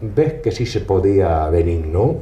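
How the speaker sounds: acted, wry, knowing, low, ironic little voice. Recalling Che Guevara looking over at you after proving you wrong, retelling Che Guevara's ironic little voice. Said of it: "con una vocecita irónica".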